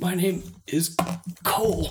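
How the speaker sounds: pained, high, wincing voice through the pain. Voicing a man with a broken leg giving his name, wincing through the pain. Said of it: "He winces through the pain".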